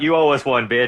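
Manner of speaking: loud shout, yelling out. As the rescued mother leaves with her babies, yelling out after her. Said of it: "And Anzu just yells out".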